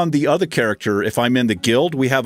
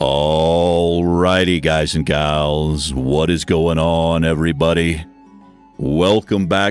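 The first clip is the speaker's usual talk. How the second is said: strained, forced, very low, slow, stretched-out voice; 8 semitones lower than usual. Showing how they opened their early videos while nervous, forced low slow voice. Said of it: "I was forcing myself to talk low and slow".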